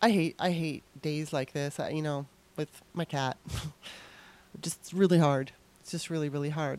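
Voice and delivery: downcast, low voice. Talking about a hard day with a cat after a guest leaves: sounding down. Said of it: "I apologize if I'm kinda sounding down".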